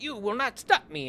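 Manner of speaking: high, sassy, taunting tone. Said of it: "him being all sassy".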